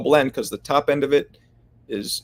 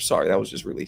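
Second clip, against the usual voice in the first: ordinary talk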